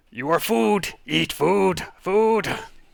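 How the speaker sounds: high, loud, yelling lizard creature voice.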